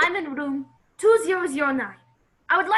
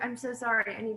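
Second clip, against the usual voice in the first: plain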